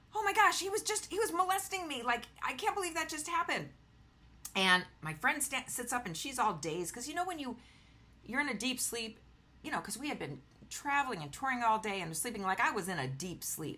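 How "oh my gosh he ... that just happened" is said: distraught, very high-pitched upset yell. Recounting an incident on a train, the speaker retells a yell. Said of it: "I'm yelling like".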